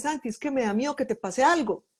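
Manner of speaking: plain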